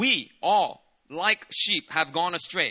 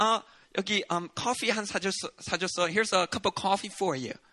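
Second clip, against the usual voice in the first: sugary, slow, fake-sweet put-on friendliness; 3 dB quieter than usual. Speaker retells a girl pretending to be nice to another girl, fake-nice voice. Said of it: "she pretends to be nice and says".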